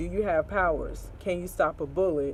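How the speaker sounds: normal talking voice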